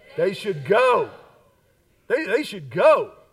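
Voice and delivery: with passion and conviction. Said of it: "Say that again".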